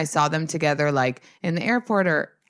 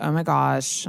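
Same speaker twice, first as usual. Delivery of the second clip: imitated English accent. Retelling what she said when she reached out to him, in an english accent. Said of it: "That was an English accent".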